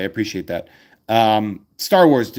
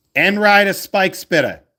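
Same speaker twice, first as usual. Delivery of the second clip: very high-pitched, put-on Boston accent; 10 semitones higher than usual. Reading a card name aloud while opening cards: Boston accent. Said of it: "say that in a Boston accent".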